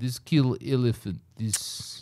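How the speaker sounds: put-on very thick, laid-on Russian accent. Imitating a shooting range instructor: imitating a thick Russian accent. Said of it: "he had a super thick Russian accent".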